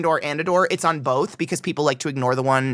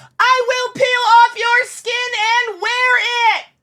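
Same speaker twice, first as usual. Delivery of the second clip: play-acted very high, shrill, slow, absurd angry yell; 5 dB louder than usual. Retelling an absurd thing yelled at the dogs: retelling an absurd yell. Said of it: "I keep yelling more absurd things like".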